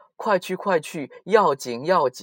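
loud, high, anxious, insistent, repeated urging tone.

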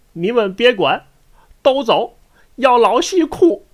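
put-on speaking with Tianjin accent. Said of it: "用天津话一说啊".

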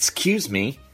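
put-on scoffing tone. Showing how british people say it after a scoff: imitating a scoffing "excuse me". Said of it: "Do you have to scoff first?".

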